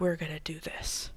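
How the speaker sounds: quiet, dead serious guy voice. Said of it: "he's a very serious guy".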